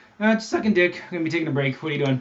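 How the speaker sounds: breezy, casual, nonchalant, offhand tone. Acting out the answer to that call: imitating a nonchalant reply. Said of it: "I like the nonchalant one".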